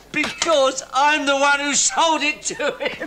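high voice, spoken through laughter. Asked why they're laughing about the land sale, answering while laughing. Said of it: "That's not funny".

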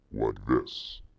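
deep-throated, voice-morphed alien monster voice. Demonstrating a headset's voice morph feature, deep-throated alien monster voice. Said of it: "to a deep-throated alien monster".

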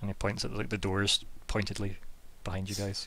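ordinary talk

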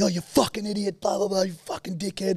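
very high, abusive yelling. Retelling two blokes yelling insults at each other, imitating blokes yelling. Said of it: "And they're just yelling".

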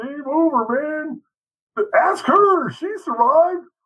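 very high, whiny, slow and drawn out. Quoting Bill Paxton's line from Aliens: whiny Bill Paxton voice. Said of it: "he has that kinda whiny, "I'm the tough guy, but I'm whiny" kinda voice".

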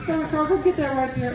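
put-on soft moan. Retelling how a man talked after every sentence, imitating a soft moan. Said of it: "he would moan a little bit".

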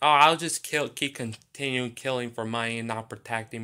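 ordinary delivery

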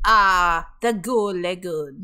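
narrating voice with a French accent. You are showing one of the accents you try to work on: SpongeBob narrator voice, French accent. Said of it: "SpongeBob narrator, French accent".

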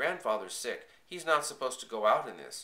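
usual speaking voice

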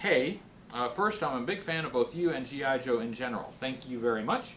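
ordinary delivery

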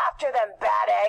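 low, snarling villain voice. Reading a story aloud, voicing Odious's line, snarling. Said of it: "snarls Odious".

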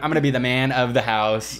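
normal talking voice

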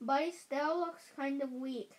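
plain reading voice

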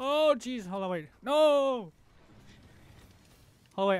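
high-pitched, loud, flustered, anxious, nervous blurting. Streamer starting a game on a modded controller while recording face cam, nervous. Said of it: "I'm really nervous right now".

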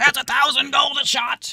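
shrill, very high sea captain yell. Voicing the enemy ship's captain after a missed blast: shouting ship captain. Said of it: "you can hear the captain shouting".

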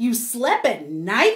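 gasping, breath caught sharply. A bat reacts to Stellaluna's story, gasping. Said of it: "gasped another".

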